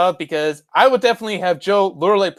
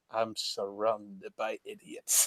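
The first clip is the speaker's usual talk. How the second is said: very deep, hushed, soft, slow, swooping villain drawl; 9 semitones lower, 17 dB quieter than usual. Acting out a movie scene, quoting the villain: imitating the villain. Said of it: "the villain being like".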